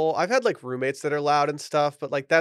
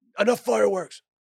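high, put-on manly tough-guy voice, trying hard; 6 semitones higher than usual. Retelling calling out to noisy neighbors at bedtime; imitating his own manly voice. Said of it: "I tried to be like real manly about it".

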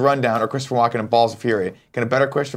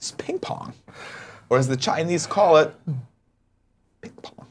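breathy delivery with more heart; 4 semitones higher, 3 dB quieter than usual. Repeating the movie line again: Christopher Walken impression. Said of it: "You had more heart that time".

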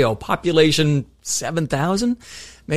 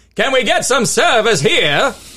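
put-on Maine accent, pitched up; 8 semitones higher, 4 dB louder than usual. Quoting a guy in a Dunkin' Donut asking for service, Maine accent. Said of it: "in my Maine accent is one guy in a Dunkin' Donut saying".

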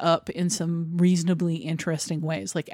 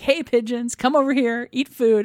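put-on yell, higher and louder; 6 semitones higher, 4 dB louder than usual. Retelling a film scene of yelling at pigeons: imitating May Whitty yelling. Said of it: "she's yelling, like".

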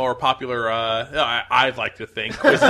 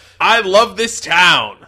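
loud, slow, lingering, drawn-out movie-star voice; 6 semitones higher, 6 dB louder than usual. Quoting a movie line for a trivia question: Bill Murray impression. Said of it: "That was a less good impression".

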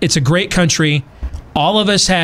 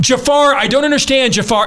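frantic, screaming yell; 9 semitones higher than usual. Retelling calling a driver on the phone in public, re-enacting screaming into the phone. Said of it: "I'm screaming into my phone".

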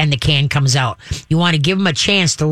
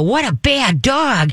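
cheerful, pleased, high, drawn-out tone; 7 semitones higher than usual. Showing how tone matters to a dog, the speaker uses a happy high-pitched voice. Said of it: "like you could go up to a dog and go".

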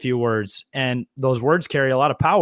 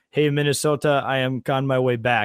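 put-on Russian accent with broken English. Quoting what Kirill said yesterday; imitating Kirill's Russian accent. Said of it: "speaks with a Russian accent".

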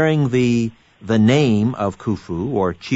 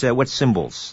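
usual speaking voice

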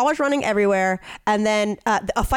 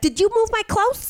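put-on cartoon girl voice, much higher pitch; 12 semitones higher than usual. Retelling a dispute about clothes moved from the dryer, in a Betty Boop voice. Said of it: "They sound like two Betty Boops".

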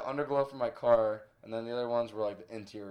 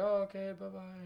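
put-on Brazilian accent with raised pitch; 9 semitones higher, 4 dB quieter than usual. Retelling what the Brazilian girl said when leaving: imitating a Brazilian accent. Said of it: "she's Brazilian".

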